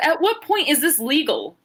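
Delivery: put-on referee voice, screaming and demanding. Retelling the referee questioning a wrestler: imitating referee screaming. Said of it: "And then screams at Indy and says".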